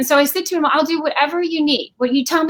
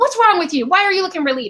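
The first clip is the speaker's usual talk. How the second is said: put-on stern, dad-like, yelling voice; 4 semitones higher than usual. Retelling being told off after getting fired: imitating a dad-like yell. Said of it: "like a dad yelling at you".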